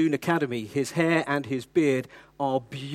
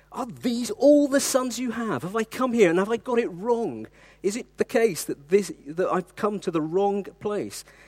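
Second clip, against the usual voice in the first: mock exasperated tone, pitched up; 6 semitones higher than usual. Retelling Samuel's question from the scripture passage: exasperated Samuel voice. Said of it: "you can almost hear the exasperation".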